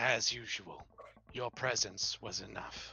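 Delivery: icy, cold, soft half-whispered voice. Voicing a voice that half-whispers to a player: cold half-whisper. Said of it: "It whispers to you coldly".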